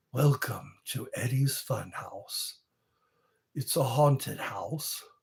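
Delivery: spooky, haunted-house ghostly voice. A shorts creator opens a haunted house bit in a ghostly voice. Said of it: "I'm using my ghostly voice".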